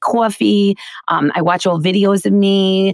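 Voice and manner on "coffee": coffee said in a Queens accent. Showing how she used to say words as a kid: put-on Queens accent. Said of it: "I used to say".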